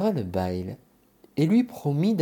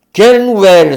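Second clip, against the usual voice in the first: yelled at the top of the lungs, high-pitched; 5 semitones higher, 18 dB louder than usual. A narrator reads the rancher's answer to the visitor at his door, shouting very loud. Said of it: "en criant très fort".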